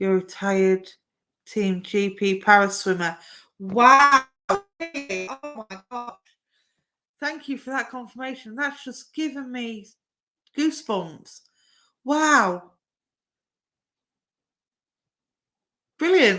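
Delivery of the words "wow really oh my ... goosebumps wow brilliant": high, genuinely stunned, astonished exclamations. Speaking to a man who has just confirmed something: shocked. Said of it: "I don't know why I sound so shocked".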